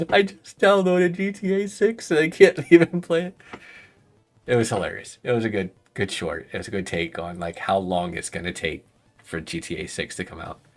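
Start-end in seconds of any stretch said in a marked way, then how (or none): 0.1-3.3 mock, very high, loud, tearful sobbing wail. Retelling a son's line from a funny short video, imitating someone crying. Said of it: "he's like crying".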